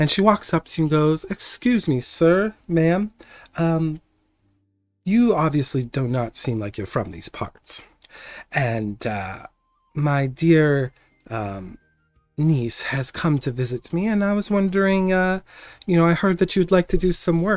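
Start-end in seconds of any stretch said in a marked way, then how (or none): 1.2-17.6 put-on elderly halfling woman character voice. Game master voicing an older halfling woman approaching the players. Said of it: "older halfling approaches you".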